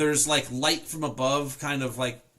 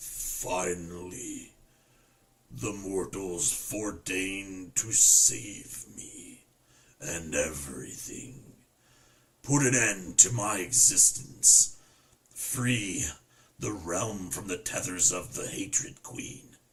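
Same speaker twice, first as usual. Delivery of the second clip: low, rough, gravelly rasp; 6 semitones lower than usual. Narrating a scene, voicing a figure looking down at the listeners: gravelly voice. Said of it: "he says in a gravelly voice".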